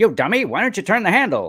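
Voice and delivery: very high slapstick comedian voice, comic. Retelling a Three Stooges audio record: imitating Mo from the Stooges. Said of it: "Mo's going".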